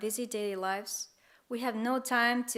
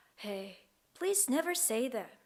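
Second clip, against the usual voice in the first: put-on lonely voice, quieter; 2 semitones higher, 4 dB quieter than usual. Retelling a grandmother's reply to his words about dying, imitating a lonely voice. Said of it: "replied with a lonely voice".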